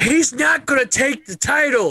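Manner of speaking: put-on voice, pitched very high. Predicting a wrestler won't take the title, Paul Heyman voice. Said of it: "if I may do my Paul Heyman voice".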